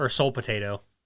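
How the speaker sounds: ordinary delivery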